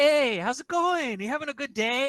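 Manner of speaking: very high, way too eager, overly energetic tone. Speaker editing past episodes mimics how Betty greets people: imitating Betty's energetic greeting. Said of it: "watch Betty be like".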